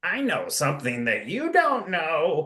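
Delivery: put-on high, swooping, sing-song crazy old man voice. Recalling voicing a crazy old man who warns campers: crazy old man voice. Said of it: "I think I even did his voice".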